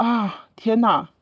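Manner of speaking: play-acted grave, doom-laden, grim, dismayed tone. Retelling the doctor's reply after hearing she has no children: imitating a dismayed doctor. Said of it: "他的那个语气给我的一种感觉就是我完了".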